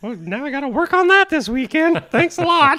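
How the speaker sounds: acted mascot character voice. Voicing Toothy after Steve calls him naked: Toothy voice. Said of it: "trying to do his voice".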